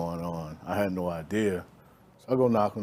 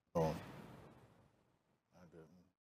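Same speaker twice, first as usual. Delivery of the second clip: crying, tearful voice; 2 semitones lower, 15 dB quieter than usual. A guest answers the interviewer's question about someone who loved her, crying. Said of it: "why are you crying right now?".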